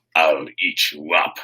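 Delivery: low, very slow, menacing, drawn-out nasty growl. Carly Beth leans in close to a scared little girl, nasty growl. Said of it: "she growled nastily".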